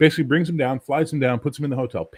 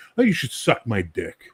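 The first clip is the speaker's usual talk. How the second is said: play-acted, totally earnest, matter-of-fact, dead straight delivery. Retelling a producer's demand at dinner: imitating a deadpan delivery. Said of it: "with a dead straight delivery".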